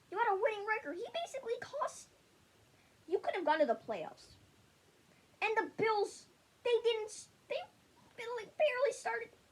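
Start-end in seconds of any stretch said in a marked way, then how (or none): 5.4-9.2 flustered stutter, tripping over words, pitched up. Ranting about a player's losses and the bills game, stuttering. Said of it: "I'm stuttering because of this".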